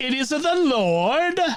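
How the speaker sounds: put-on Italian accent. Telling a joke, voicing the other guy showing how, in an italian accent. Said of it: "you need an Italian accent".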